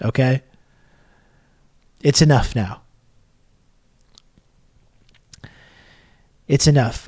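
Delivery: annoyed, fed-up, pissed-off tone. Addressing viewers during a stream after more subscriptions arrive, pissed off. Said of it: "I'm getting really pissed off now".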